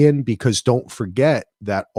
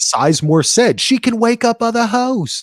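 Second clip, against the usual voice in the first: very high, fake put-on English accent; 12 semitones higher, 3 dB louder than usual. Recapping what an English writer said, in a put-on English accent. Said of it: "That's my English accent".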